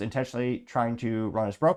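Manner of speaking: ordinary talk, nothing marked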